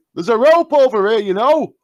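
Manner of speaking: very loud, shrill, high shout. Playing a character in a game while another climbs up: shouting. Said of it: "I'm shouting".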